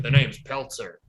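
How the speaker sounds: put-on noir detective voice. Discussing a film's opening, quoting the character introducing himself: Peltzer noir voice. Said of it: "That opening is straight out of a noir".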